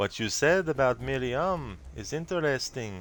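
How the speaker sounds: attempted serious French accent. Replying to the other speaker, in a put-on serious french accent. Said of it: "That's my attempt again at a quote unquote serious French accent".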